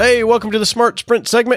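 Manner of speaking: hurried, rushed delivery. Opening a segment right after a race start call: talking fast. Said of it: "I always feel like I have to talk fast".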